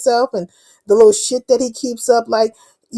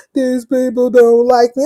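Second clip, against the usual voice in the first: mock weepy, tearful crying voice; 3 dB louder than usual. Retelling what another person said while crying: imitating someone crying. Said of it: "he was over there crying".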